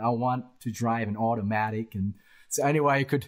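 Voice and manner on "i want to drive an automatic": deliberate, slow put-on American accent. Retelling being misunderstood by something, put-on American accent. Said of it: "I had to put on an American accent".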